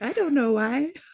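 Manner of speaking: put-on high little voice of a small young child. Imagining how her 4-year-old would say it, little child's voice. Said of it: "my 4-year-old in her little voice".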